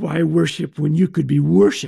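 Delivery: rough, creaky serpent-like hiss. Retelling Adam and Eve's story as the serpent speaks, hissing as Satan. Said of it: "he hissed".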